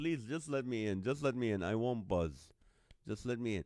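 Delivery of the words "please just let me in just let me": usual speaking voice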